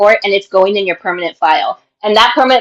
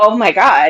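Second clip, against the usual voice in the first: mock horrified gasp, much slower. Retelling the captain's reaction to the story, acting out a horrified gasp. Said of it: "Like she's horrified".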